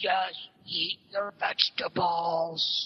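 gruff superhero voice. Retelling a video where a dad dresses as Batman: Batman voice. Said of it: "you gotta talk like this".

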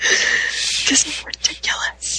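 soft, whispered, barely voiced. On a podcast, after being told to be quiet, whispering. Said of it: "Why are we whispering?".

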